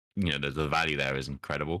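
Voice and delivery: normal talking voice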